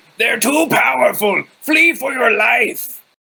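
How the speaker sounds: booming, loud, high goblin voice shout. A player casts Minor Illusion to make a voice in the game: loud goblin voice. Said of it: "Make it a Goblin voice, really loud".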